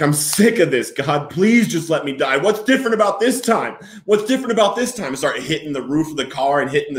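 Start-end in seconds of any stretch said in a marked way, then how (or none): 0.0-5.1 play-acted sobbing outburst, high, yelled. Speaker retells yelling at the dope man in his car, retelling own yelling. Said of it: "I start yelling at him. Like".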